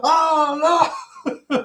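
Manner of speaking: very high, loud cry with "oh" drawn out. Retelling an imagined movie scene, imitating Alan Grant exclaiming. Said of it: "Doctor Alan Grant is like".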